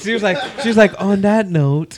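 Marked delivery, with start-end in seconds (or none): 1.0-2.0 mock sexy put-on voice, higher. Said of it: "she put on her sexy voice now".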